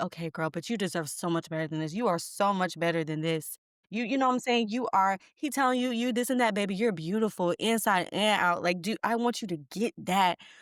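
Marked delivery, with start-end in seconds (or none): none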